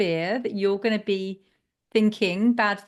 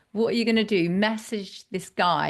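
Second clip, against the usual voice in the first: dry, sarcastic mocking remark. Speaker recalls what she said to a woman: retelling a sarcastic remark. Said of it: "So I said to her sarcastically".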